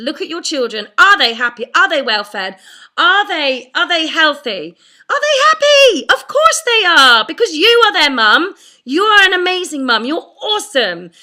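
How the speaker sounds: loud, passionate, heated and fired-up delivery. Urging mums to push the guilt gremlin away: passionate, getting angry. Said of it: "wondering why I'm getting angry".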